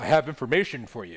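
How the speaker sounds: put-on villain voice. Voicing the Shadow Lord offering information: Shadow Lord voice. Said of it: "that's the Shadow Lord voice".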